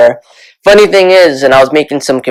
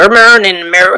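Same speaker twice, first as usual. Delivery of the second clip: clumsy, bad put-on Southern accent, pitched up; 7 semitones higher than usual. Host redoing a phrase he just stumbled over, bad Southern accent. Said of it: "that was a really bad Southern accent".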